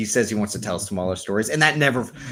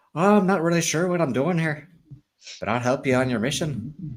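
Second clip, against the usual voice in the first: high, rushed, botched attempt at a Belfast accent; 6 semitones higher than usual. Mocking an actor's failed attempt at an accent: imitating Charlie Hunnam's bad Belfast accent. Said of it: "but his accent, he's like".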